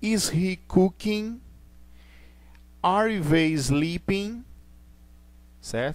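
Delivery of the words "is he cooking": rising tune, pitch climbing on cooking. English intonation lesson on questions, rise on cooking. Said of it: "O final ele sobe".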